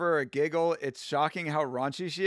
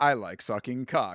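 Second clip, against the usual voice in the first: put-on AI-sounding voice, much lower; 5 semitones lower than usual. Speaker describing songs that get stuck in their head, imitating an ai voice. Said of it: "it's like an A I voice".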